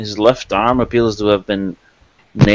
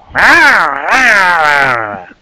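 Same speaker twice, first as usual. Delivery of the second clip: high, loud, swooping goblin voice with drawn-out ah; 7 semitones higher, 5 dB louder than usual. Voicing a goblin that speaks as players enter: goblin voice. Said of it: "the goblin says".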